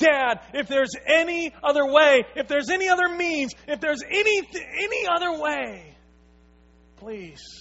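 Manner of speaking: high pleading cry. Retelling a story of a son crying out to his dad; retelling a pleading cry. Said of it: "he cries out to his dad".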